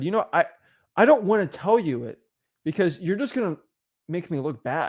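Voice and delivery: ordinary delivery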